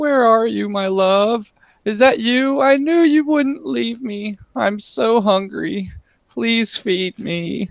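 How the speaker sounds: very high, weeping, sobbing voice. Game master voicing a woman heard crying from a cave: crying voice. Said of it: "you can hear like crying".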